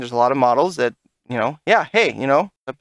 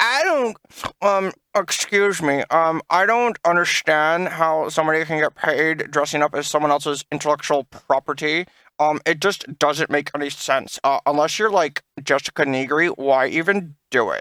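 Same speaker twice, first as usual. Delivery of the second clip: halting, hesitant speech full of ums. Retelling what another podcast member said, imitating Taylor. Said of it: "That's a really good impression of Taylor".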